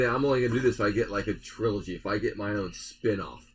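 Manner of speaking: ordinary talk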